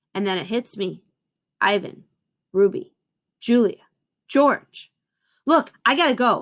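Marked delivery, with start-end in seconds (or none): 5.4-6.4 choked, strangled voice, higher pitch. Narrator, suddenly remembering others, tells the mother of having to go, strangled voice. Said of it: "I say in a strangled voice".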